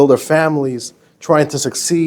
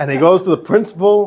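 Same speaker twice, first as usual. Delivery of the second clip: ordinary delivery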